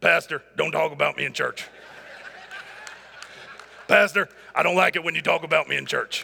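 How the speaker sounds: put-on voice, gruff, low and rough. Pastor imitating someone who dislikes being mentioned in church: Joe impression. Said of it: "I got to do a better impression of Joe".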